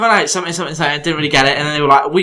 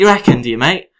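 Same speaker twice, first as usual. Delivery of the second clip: put-on chav voice, tough-talking. Speaker retells answering people after getting offended, in a put-on chavvy voice. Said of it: "I turn a bit chavvy".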